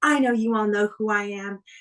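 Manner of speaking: put-on bitchy taunting voice. Retelling a wrestling promo where Sunny insults the crowd: imitating Sunny's bitchy taunting. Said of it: "and she's like".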